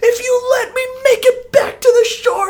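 very high-pitched, loud shouting.

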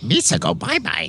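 full goofy alien creature voice. Signing off a podcast, a host says goodbye in Jar Jar Binks voice. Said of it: "your two best impressions are that fucking robot from Star Crash and Jar Jar".

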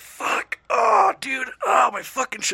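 drawn-out cries of pain. Retelling being hurt in a truck, imitating own cries of pain. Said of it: "He thought I was mimicking Family Guy".

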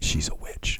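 put-on flat deadpan. Retelling a remark made to a man who didn't know the speaker, retelling a deadpan line. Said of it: "I looked at him just deadpan".

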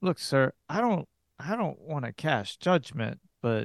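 hushed, half-whispered. Game master voicing a man who speaks out of Sam's earshot, whispering out of earshot. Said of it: "And he looks at [name] and looks back at you".

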